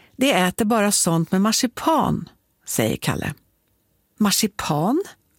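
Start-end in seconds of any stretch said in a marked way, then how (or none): 4.2-5.0 astonished, surprised tone. Told that a ghost only eats marzipan, a girl responds, surprised. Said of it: "Säger Sockerbella förvånat".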